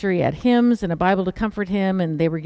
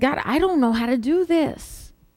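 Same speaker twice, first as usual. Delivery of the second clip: put-on, slow, high-pitched, drawn-out pleading; 6 semitones higher than usual. Retelling what they said to God; retelling own pleading. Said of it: "And then I pleaded".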